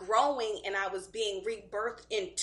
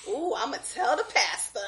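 put-on woman laughing while joking. Retelling a lady's joking remark at a party: imitating her laughing while joking. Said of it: "she was laughing".

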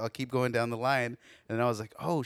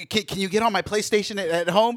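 put-on desperate kid voice, higher; 8 semitones higher, 8 dB louder than usual. Father retelling the kid's phone call, imitating a desperate kid. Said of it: "he's like sounding desperate".

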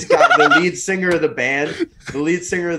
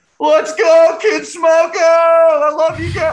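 put-on acted, very high, very slow, drawn-out drunken yell; 13 semitones higher, 5 dB louder than usual. Telling how a drunk guy broke a moment of silence, retelling a drunk guy screaming. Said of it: "he just starts screaming".

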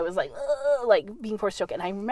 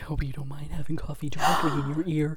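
low, sassy, sultry, sexy radio voice; 6 semitones lower, 3 dB quieter than usual. Joking about your microphone picking up coffee, sexy time voice. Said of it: "What was that voice that you made that was like sexy time voice?".

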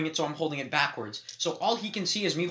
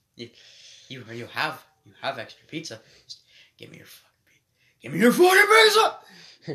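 put-on violently twitchy voice, louder; 9 dB louder than usual. Retelling a stranger demanding pizza: imitating a violently twitching stranger. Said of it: "he kinda started violently twitching".

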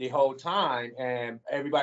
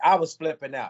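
ordinary talk, nothing marked

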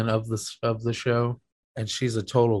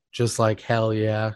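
plain

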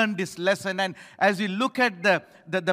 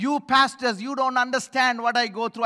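put-on cross, complaining, angry shouting outburst; 4 semitones higher than usual. Retelling how a church member shouted at the pastor: imitating someone shouting angrily. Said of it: "She started shouting at me".

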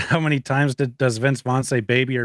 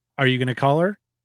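put-on computer-like machine voice; 2 semitones higher than usual. Retelling a movie scene where the answering machine replies: computer voice. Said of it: "in the computer voice".

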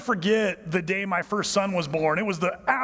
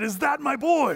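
hoarse, rasping, pitched-up voice; 7 semitones higher than usual. A father retells first seeing his newborn son, speaking to him: retelling in a raspy voice. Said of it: "and with this raspy voice".

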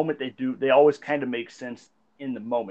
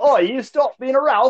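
very high, loud, put-on fake Australian accent; 11 semitones higher, 6 dB louder than usual. Imagining an aussie insult someone might say, in a put-on aussie accent. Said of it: "I do love your Aussie accent that you put it on".

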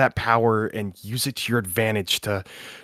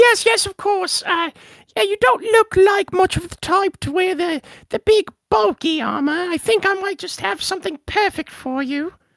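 put-on small goblin voice, much higher pitch; 3 dB louder than usual. Game master voicing a small goblin armorer answering a customer, small goblin voice. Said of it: "a small goblin who looks up at you and goes".

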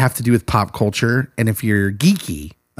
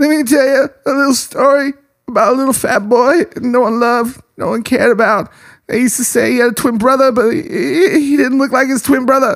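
very high, stammering voice; 13 semitones higher, 4 dB louder than usual. Retelling a movie scene, doing a Bobcat Goldthwait impression. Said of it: "I used to be able to do an impersonation of that".

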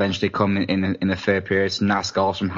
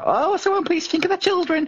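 put-on cartoon witch voice, very high. Imagining the reaction if league games had that atmosphere; Wizard of Oz witch voice. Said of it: "Why did you sound like the witch off a Wizard of Oz then?".

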